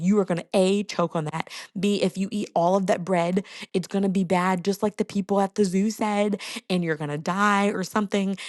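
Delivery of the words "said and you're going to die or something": normal talking voice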